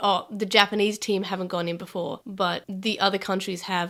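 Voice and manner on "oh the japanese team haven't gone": plain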